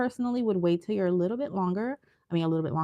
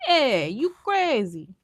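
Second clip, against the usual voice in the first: put-on mobster-style Italian accent, pitched up; 6 semitones higher, 3 dB louder than usual. Showing someone how to say a line with the Italian accent. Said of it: "with the Italian accent".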